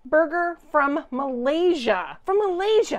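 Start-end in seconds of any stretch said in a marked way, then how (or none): 2.2-3.0 very high, loud, startled surprised exclamation. Assembling a burger, repeating where it is from: surprised. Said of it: "I don't know why I sound so surprised".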